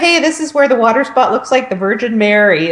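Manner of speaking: ordinary talk, nothing marked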